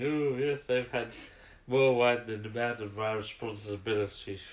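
put-on tipsy voice. Describing a scene from a show, quoting Tremas, imitating Tremas sounding drunk. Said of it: "It sounds like he's a little bit drunk".

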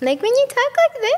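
put-on very high-pitched, childlike baby talk voice. Demonstrating the voice guys dislike girls using: a baby voice. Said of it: "Baby voice, so like so guys don't like when girls use a baby voice".

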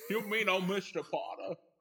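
accidental slip into a cartoon voice. Recalling a movie title, accidentally sounding like Elmer Fudd. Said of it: "That sounded like Elmer Fudd".

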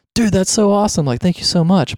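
effusive, warm enthusiasm. Acting out their reply to a longtime listener, imitating warm, exuberant thanks. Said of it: "my response will probably be like more warm and exuberant".

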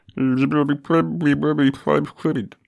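high, loud, wobbly voice. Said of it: "He's got a bit of a wobbly voice".

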